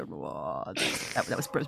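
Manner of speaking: cringing voice. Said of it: "Just go".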